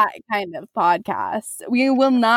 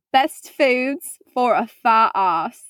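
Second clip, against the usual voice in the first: fake, put-on British English accent. Repeating a topic to the other speaker, he uses a put-on british accent. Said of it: "Did you not understand me over my accent".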